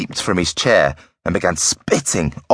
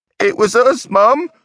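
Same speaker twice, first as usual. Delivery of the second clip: very high, drawn-out guffawing, laughing through words; 4 dB louder than usual. Elsie speaking to Mum, guffawing. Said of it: "Elsie guffawed".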